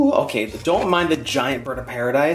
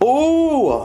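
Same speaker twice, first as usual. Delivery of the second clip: high-pitched, drawn-out, thrilled oohs. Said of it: "I'm, like, yelling in your face".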